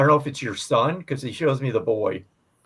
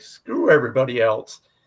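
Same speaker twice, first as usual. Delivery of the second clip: ordinary talk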